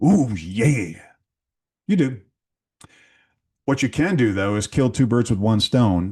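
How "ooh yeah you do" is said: slow, swooping, drawn-out pro wrestler voice. A board member answers a question about certification in a best Macho Man Randy Savage voice. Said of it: "in my best Macho Man Randy Savage voice".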